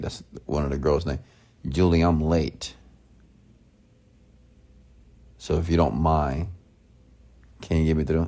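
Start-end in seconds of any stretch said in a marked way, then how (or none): 1.7-8.3 sure, confident, certain, matter-of-fact tone. Retelling own words to a gatekeeper, lying: retelling speaking with confident certainty. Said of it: "speaking with certainty and with confidence".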